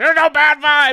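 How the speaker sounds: high-pitched, shrill yelling at full volume. Retelling what the other speaker said: imitating someone yelling. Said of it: "He's yelling at me".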